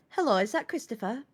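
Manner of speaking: put-on telephone voice. Retelling ringing Chris while working for a dentist, in a put-on telephone voice. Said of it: "there is my telephone voice, which freaks everyone out".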